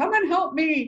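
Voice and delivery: frightened, loud, high-pitched yell. Retelling a panicked man calling out for help: imitating someone yelling. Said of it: "he's yelling for women".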